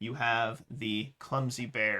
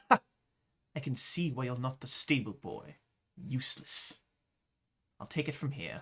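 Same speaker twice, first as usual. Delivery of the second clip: haughty, very condescending, talking down. Narrating a game scene, voicing the woman addressing a player, in a very condescending voice. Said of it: "in a very condescending voice".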